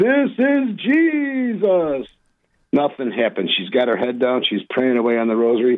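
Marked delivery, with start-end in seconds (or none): 0.0-2.1 very loud, very high hollering call, "Jesus" drawn out. Retelling a man calling to a praying woman, retelling a very loud call. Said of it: "this time I'll do it very loudly".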